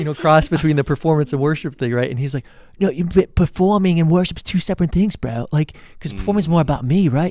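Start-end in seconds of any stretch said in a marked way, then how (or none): 2.8-7.3 put-on thick, heavily laid-on Australian accent. Retelling what an artist said in a conversation: heavy Australian accent. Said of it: "Australian accent".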